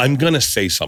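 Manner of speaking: pointed, emphatic delivery. Retelling a plane passenger speaking to his boyfriend: imitating someone saying it loud.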